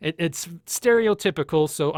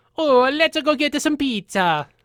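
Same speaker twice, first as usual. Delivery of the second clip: loud, very high, clichéd Italian accent; 10 semitones higher, 5 dB louder than usual. Demonstrating character voices, ending on a stereotypical Italian accent. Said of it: "kind of a stereotypical Italian".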